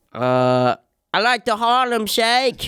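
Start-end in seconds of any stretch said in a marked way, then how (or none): 1.1-2.6 put-on British accent, very high-pitched. Asked to say something, answering in a put-on british accent. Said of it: "Do you have a British accent, [name]? I do".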